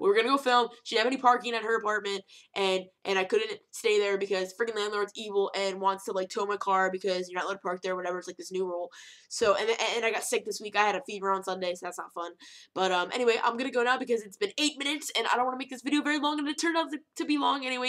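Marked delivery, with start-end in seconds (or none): 13.4-16.4 very fast, rattled-off delivery. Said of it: "even though I'm talking really, really fast".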